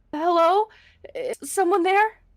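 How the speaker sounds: shaky, trembling woman's voice. Game narrator voicing a woman calling out inside the Death Temple: trembling woman's voice. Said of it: "you hear a trembling woman's voice call out".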